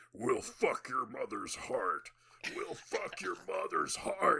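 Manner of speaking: slow, drawn-out, yelled demon voice. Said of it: "yelling at him in the demon voice".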